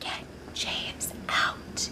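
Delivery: soft, unvoiced whisper.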